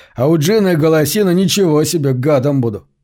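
ordinary delivery, nothing marked

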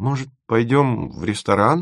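timid, shy, hesitant, tentative tone. A man asks a girl a question; timid, hoping for a no. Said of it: "с робкой надеждой на отказ спросил Тимофеев".

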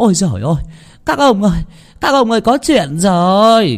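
out of breath. A woman runs up to men at the village edge, out of breath. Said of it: "thở không ra hơi".

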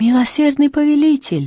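high, quavering, trembling voice. In a story, a man recognizes the laughing joker and answers in a trembling voice. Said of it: "спросил он дрожащим голосом".

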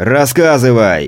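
loud shouting. The federal agent, his patience running out, to the narrator: shouting. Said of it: "И незачем так кричать".

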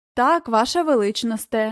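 ordinary delivery, nothing marked

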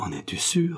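faltering, stammered. A narrator reads a young man's question to the woman on his shoulder, stammering.

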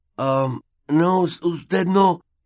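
very high groan. Narrating a boy coming to on the field as someone leans over him, groaning. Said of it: "gimió".

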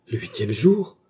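sudden, exclaimed cry. Baccarat reacts as the doctor speaks of her fever: exclaimed. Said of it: "s'écria Baccarat".

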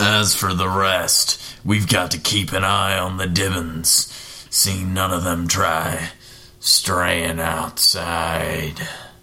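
really sinister, menacing-sounding voice.

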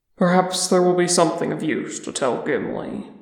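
ordinary delivery

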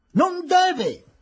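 sudden shrill shout, very high pitch. Amid a growing uproar in the courtroom, a woman is crying out. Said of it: "gridò Mrs. Tarton nel tumulto crescente".

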